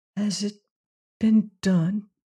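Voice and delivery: in a whisper. Narrator reading a prisoner's question to Leonard: whispered. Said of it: "She whispered".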